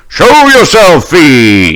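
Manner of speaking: loud, high knightly shout, "fiend" drawn out. Voicing a paladin challenging an unseen figure: shouting in character. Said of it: "and he shouts".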